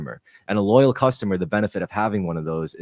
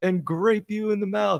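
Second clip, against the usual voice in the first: put-on giant monster voice, higher; 13 semitones higher, 4 dB quieter than usual. Retelling a comedy skit's giant grape monster: imitating a giant grape monster. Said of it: "it's this giant grape monster breaks, and he's like".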